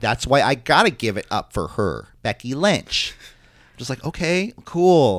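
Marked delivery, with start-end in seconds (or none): 0.0-3.1 put-on Minnesota-accented speech. Retelling what a woman said about Becky Lynch, in a put-on accent that sounds Minnesotan. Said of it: "The way you do the accent sounds like she's like from Minnesota".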